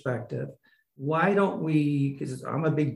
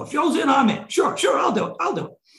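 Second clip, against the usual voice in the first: heavy put-on Boston accent, much higher and louder; 11 semitones higher, 5 dB louder than usual. Retelling what Dave, who commutes from Boston to Maryland, said, Dave's heavy Boston accent. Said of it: "Heavy Boston accent".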